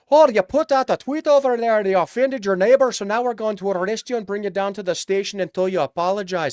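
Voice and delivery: affected Scottish brogue. Switching accents after a bad Canadian one, mocking the authorities; mock Scottish accent. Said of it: "I'll switch to Scottish".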